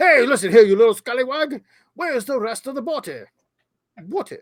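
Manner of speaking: bad put-on English accent, very high pitch. Acting out a line while retelling a story, in a terrible put-on accent. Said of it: "That's terrible".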